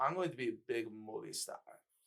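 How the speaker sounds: put-on European-accented voice. Describing the same game character's side quest: European accent. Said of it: "I know the accent you're doing".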